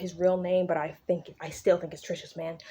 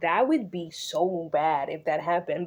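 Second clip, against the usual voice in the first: ordinary talk, nothing marked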